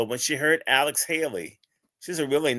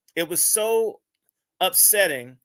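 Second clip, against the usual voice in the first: ordinary delivery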